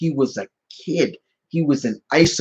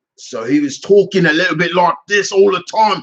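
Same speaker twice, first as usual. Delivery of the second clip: put-on thick, strong London Cockney accent; 3 semitones higher, 4 dB louder than usual. Explaining how Rocket was originally voiced, in Rocket's strong Cockney accent. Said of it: "Rocket basically spoke with a strong Cockney accent".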